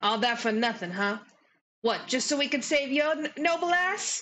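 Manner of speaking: dark-toned, bitter delivery. Voicing a character who learns the mission failed: Lady Morgort, dark bitter tone. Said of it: "Lady Morgort gets a really dark look on her face. She goes".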